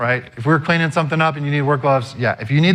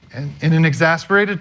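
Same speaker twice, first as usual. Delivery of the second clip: usual speaking voice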